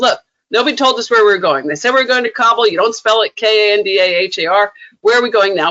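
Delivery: plain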